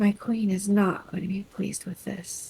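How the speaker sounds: very quiet, muttered under the breath. Speaking as Delphi in character during a game: said under her breath. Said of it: "says under her breath".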